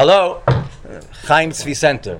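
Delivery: very deep, low, formal official-sounding voice. Retelling answering a phone call at the center, in an official phone voice. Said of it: "I put on my official voice".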